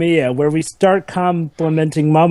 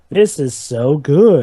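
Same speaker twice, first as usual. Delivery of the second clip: heavily sarcastic, dripping with sarcasm; 3 semitones lower than usual. Asking whether others can sense the sarcasm in their voice: heavily sarcastic. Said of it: "you can sense the sarcasm in my voice".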